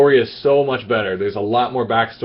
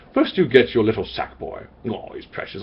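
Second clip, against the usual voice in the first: hushed, breathy, charming narration, almost a whisper; 6 dB quieter than usual. Retelling how the narrator of Little Big Planet speaks: Stephen Fry impression. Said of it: "And he's like".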